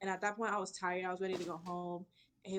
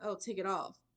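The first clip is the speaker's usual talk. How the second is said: plain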